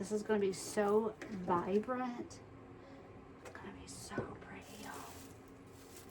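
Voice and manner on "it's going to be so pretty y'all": soft unvoiced whisper. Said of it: "I don't know why I whisper sometimes".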